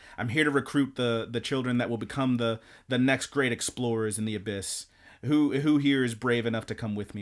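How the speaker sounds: ordinary talk, nothing marked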